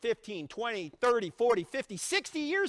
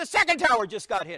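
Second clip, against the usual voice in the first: loud, sudden yell; 7 dB louder than usual. Retelling a phone call when the caller suddenly yelled: retelling a yell. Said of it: "Suddenly he yells into the phone".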